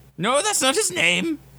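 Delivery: odd, high-pitched, swooping creature voice.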